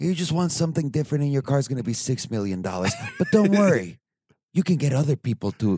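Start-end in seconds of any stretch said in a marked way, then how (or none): 0.0-2.6 acted seductive salesperson voice. Joking about ordering a custom car, in a sexy McLaren salesperson voice. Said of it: "say it in like the sexy voice that the McLaren people tell".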